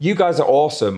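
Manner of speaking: ordinary delivery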